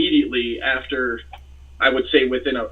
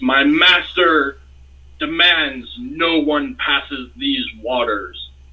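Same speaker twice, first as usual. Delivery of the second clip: slow, deliberate sea-monster voice, each word weighted. Game master voices a creature appearing on the ship's stern, in a loud, thunderous voice. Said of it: "this loud, thunderous voice".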